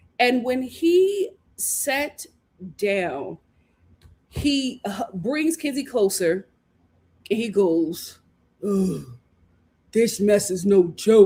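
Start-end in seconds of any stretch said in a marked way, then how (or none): 8.7-11.3 low, caveman-style speech. Retelling what Corbin said after sitting down, imitating Corbin's caveman speech. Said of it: "He speaks like a caveman".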